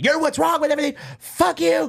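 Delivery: furious tirade, very high-pitched and raw. Telling friends about a comedian's meltdown on stage, retelling an angry tirade. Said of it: "She went into a tirade".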